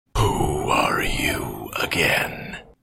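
low, labored, strained-breath rasping monster voice. Narrating a game scene, voicing the sheep squatch as it speaks: rasping, labored creature voice. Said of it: "draws in a rasping, labored breath to speak".

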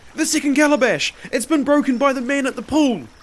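breathless, very high, loud gasping. Narrator reads a man's report after he runs up the path, gasping. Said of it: "he gasped".

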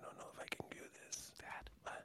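hushed, breathy whisper, barely any voice. Mocking a scene from the movie they watched, imitating Kevin whispering. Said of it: "He's whispering like that".

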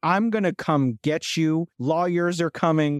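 put-on loud shouting. Retelling a dispute over money owed, the speaker quotes the woman with her, retelling a loud yell. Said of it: "Her voice went up like quadruple the volume".

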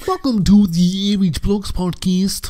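pitch way up, loud host voice. Opening a podcast as its host, in a Kermit the Frog voice. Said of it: "I haven't done a Kermit voice in a while".

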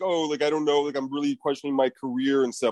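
ordinary delivery

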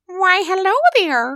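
put-on very high, loud, squeaky fish voice. Voicing a talking fish held by another player: put-on talking fish voice. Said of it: "that's a voice on you".

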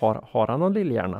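mumbled speech.

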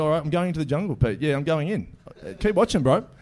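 ordinary talk

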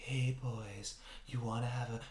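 soft seductive female voice. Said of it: "it's very seductive".

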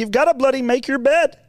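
put-on Canadian lecturer voice. Imitating Jordan Peterson for another speaker: Jordan Peterson impression. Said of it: "He's like".

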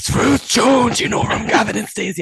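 high-pitched stage whisper. Retelling how a companion announced a celebrity at the table: imitating Michael's shouty whisper. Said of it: "announced in a very shouty whisper".

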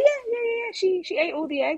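high, breezy playgroup worker voice. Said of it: "And she's like".

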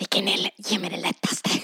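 sharp, hissed delivery. Retelling a group training class, the speaker acts out hissing to the leader. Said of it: "jag bara typ väser så här".

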